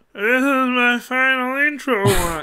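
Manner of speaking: very high, dragged-out delivery. Trying out an impression for the others: imitating Bob. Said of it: "I'm really bad at doing a Bob impression".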